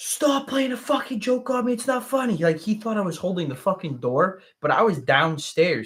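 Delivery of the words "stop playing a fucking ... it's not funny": mock, very high, shrill, all-out, top-of-lungs screaming. Retelling what he screamed from behind the bathroom door: imitating someone screaming. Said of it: "I hear him screaming on top of his lungs".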